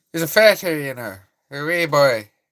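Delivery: put-on Irish accent. Showing an accent learned from a UFC fighter, in a Conor McGregor Irish accent. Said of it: "learn the accent from the U F C".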